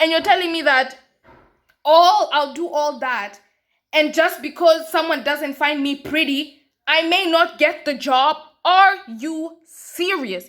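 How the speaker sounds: loud, high, angry shouting rant. A student venting about unfairness in hiring, angry shouting. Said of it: "Yes, I'm shouting".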